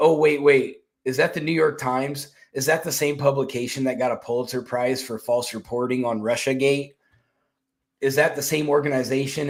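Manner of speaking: ordinary delivery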